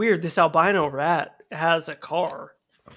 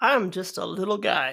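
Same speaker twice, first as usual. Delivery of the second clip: plain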